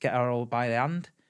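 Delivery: normal talking voice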